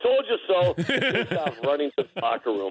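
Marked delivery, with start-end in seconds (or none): 0.0-0.7 pitched-up, shouted yell. Retelling a player turning to the opposing bench: imitating someone yelling. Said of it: "turns towards the Phoenix bench and yells".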